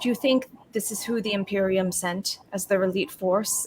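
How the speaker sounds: soft, hushed, theatrical, slight stage whisper. A character points at a companion and asks the others, in a stage whisper. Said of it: "slightly like kind of like stage whispering".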